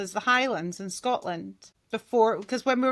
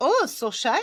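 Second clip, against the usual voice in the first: put-on camp German man's accent; 3 semitones higher, 3 dB louder than usual. Explaining a habit from all week, the speaker slips into a camp german man voice. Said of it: "I have been a camp German man all week".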